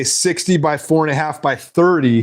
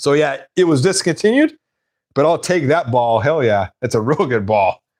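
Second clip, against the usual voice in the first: ordinary talk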